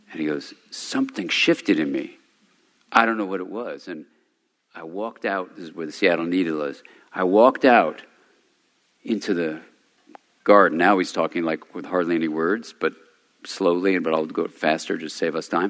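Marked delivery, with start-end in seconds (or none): 0.8-3.9 mock-tearful, hushed, quiet voice. Retelling what a man said after something shifted in him, imitating him quiet and teary. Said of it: "then he gets really quiet, and he gets teary".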